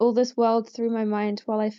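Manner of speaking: plain reading voice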